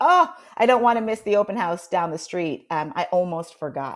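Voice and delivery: ordinary talk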